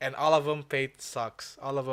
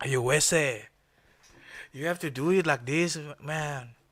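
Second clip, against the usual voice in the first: put-on movie-style Mexican accent; 4 dB louder than usual. Speaker, talking about improving accents, shows how to do a Mexican accent. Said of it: "do Mexican accent".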